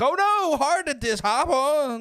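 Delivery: wrestler-style voice, pitched very high. Retelling a wrestling segment, imitating Zack Cassidy. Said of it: "it was a good impression".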